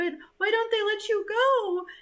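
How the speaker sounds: very high-pitched, tearful crying voice. Speaker retells a mother pleading about her son, imitating someone crying. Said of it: "she's just crying like".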